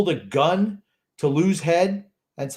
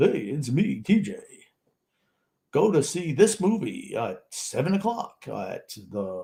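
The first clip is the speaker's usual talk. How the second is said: fake movie-trailer announcer delivery; 4 semitones lower, 4 dB quieter than usual. Mocking a co-host's fake voice from reading an ad, fake Mr. Moviefone voice. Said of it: "that fake voice you like to use".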